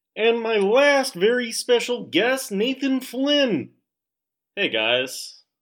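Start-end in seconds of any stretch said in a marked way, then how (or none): 0.2-3.7 high-pitched, lukewarm, half-hearted, lazy frog voice. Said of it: "that was my very lukewarm, uh, Kermit the Frog impression".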